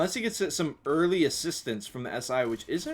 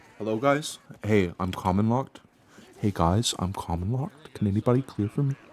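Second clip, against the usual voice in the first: put-on, very calm, composed, collected voice; 4 semitones lower than usual. Imitating a player calmly asking teammates for help: imitating a player speaking very calmly. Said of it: "Nisha is just very calmly like".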